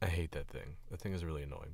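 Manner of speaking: normal talking voice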